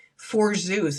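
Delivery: ordinary talk, nothing marked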